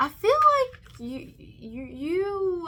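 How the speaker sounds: stammer repeating you, drawn out. Speaker searches for words while telling the listener something, stuttering. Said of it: "I'm stuttering".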